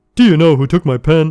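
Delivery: loud, thoroughly annoyed, extremely irritated voice. Reading a story aloud, a coworker asking who took her things: most annoyed voice. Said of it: "in the most annoyed voice".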